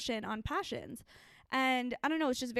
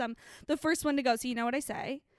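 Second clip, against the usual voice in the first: ordinary delivery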